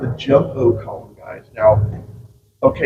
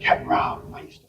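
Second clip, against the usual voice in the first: put-on whispered aside, much quieter. Retelling what a local man on his boat tour whispered to him, retelling a whisper. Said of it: "He whispers in my ear".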